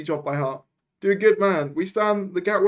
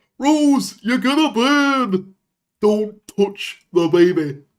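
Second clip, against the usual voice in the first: loud, very slow, deliberate, burn drawn out; 3 semitones higher, 6 dB louder than usual. Answering a chat request for impressions: Chris impression. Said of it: "Try to do Chris".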